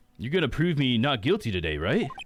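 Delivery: dopey, dim-bulb, dumb dude voice. Voicing a character asking the lawyer for help, in dumb dude voice. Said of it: "my dumb dude voice".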